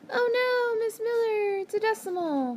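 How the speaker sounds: very high-pitched, freaked-out, panicky voice. Teacher imitates her students freaking out over a decimal: mimicking students' high-pitched voice. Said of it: "your high-pitched voices".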